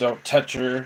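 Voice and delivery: dark, sinister, possessed-sounding evil voice. Retelling a possessed girl warning her friend: evil voice. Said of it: "told her in this evil voice".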